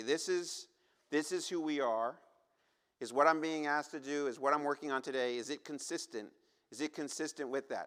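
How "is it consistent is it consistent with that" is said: ordinary talk, nothing marked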